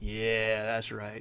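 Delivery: sultry, sexy, seductive come-hither voice. Putting on a voice for the other players as a joke: sexy voice. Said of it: "Listen to this sexy voice".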